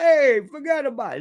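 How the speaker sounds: New York Bronx or Brooklyn accent. Explaining where different accents come from, demonstrating a phrase: bronx or brooklyn accent. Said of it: "That's that's the Bronx or Brooklyn".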